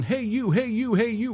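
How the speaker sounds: mock sergeant yelling, pitched high. Retelling a sergeant walking among recruits: imitating a sergeant yelling. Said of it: "he's yelling".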